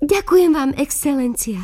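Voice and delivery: happy, eager, joyful, high-pitched. The girl telling the story answers the excellency, calling out joyfully. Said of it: "Zvolala som radosne".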